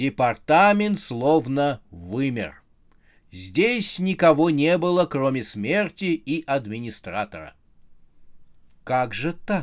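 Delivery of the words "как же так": soft, barely voiced whisper under the breath. Death finds the department empty except for the administrator, whispered. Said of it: "прошептала смерть".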